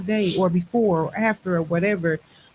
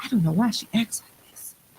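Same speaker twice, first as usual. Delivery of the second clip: hushed, secretive whisper; 2 semitones higher than usual. Retelling what he whispered to her mom: imitating someone whispering. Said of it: "whispered to my mom".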